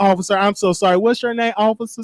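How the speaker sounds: normal talking voice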